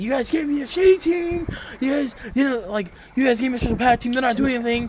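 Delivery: loud yell. Retelling how a classmate yelled at his team: imitating someone yelling. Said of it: "Started yelling at his teams".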